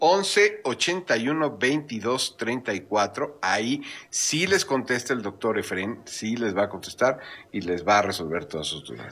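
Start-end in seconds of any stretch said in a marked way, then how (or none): 0.0-3.4 repeated much more slowly. Repeating the phone number after being asked to go slower: said more slowly. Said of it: "pero más despacio".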